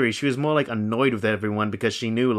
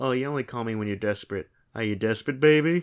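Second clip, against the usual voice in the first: put-on teasing mockery. Retelling how a TV character taunts a caller: imitating mocking taunt. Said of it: "makes fun of him".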